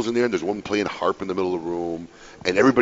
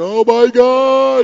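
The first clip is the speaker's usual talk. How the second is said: very high, loud shriek, word God stretched out; 9 dB louder than usual. Retelling a wife's reaction as the daughter is dropped: imitating wife screaming. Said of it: "You hear my wife in the background screaming".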